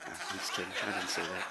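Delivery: soft, low laughing delivery.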